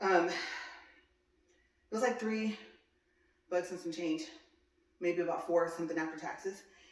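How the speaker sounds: catching breath while talking. Showing you guys the coaster just bought, still out of breath. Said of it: "Now I'm trying to catch my breath".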